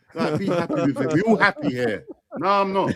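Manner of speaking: ordinary delivery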